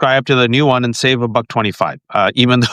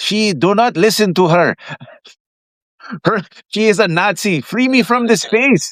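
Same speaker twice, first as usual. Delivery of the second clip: put-on squeaky, very high Mexican Spanish accent; 9 semitones higher than usual. Retelling what a guy said in a pop-culture bit: Spanish accent. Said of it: "like a Mexican with a Spanish accent".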